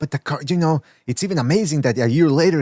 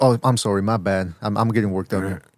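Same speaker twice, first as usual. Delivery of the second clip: put-on clenched mumbling, lower pitch; 6 semitones lower than usual. Retelling how Sobers would apologize mid-rant: imitating Sobers clenching and mumbling. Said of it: "I was expecting Sobers to go mid-rant, like".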